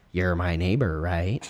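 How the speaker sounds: deep voice. Retelling what a neighbor said at the door: imitating the neighbor. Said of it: "the best impression I can do".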